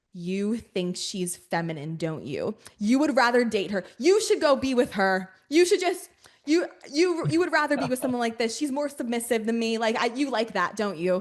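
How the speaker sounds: play-acted, heated, angry, accusing rant with swooping pitch. Retelling accusing a partner during a show: imitating her own angry accusation. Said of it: "going off".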